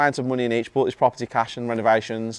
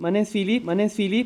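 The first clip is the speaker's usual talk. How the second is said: Welsh-accented voice; 9 semitones higher than usual. Asked to do his welsh accent into the microphone: welsh accent. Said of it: "Do your Welsh accent".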